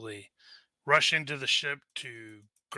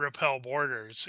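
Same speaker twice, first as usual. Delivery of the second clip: ordinary talk, nothing marked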